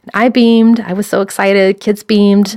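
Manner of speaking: ordinary talk, nothing marked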